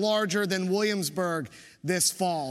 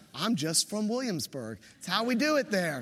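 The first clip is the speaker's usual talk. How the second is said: ordinary talk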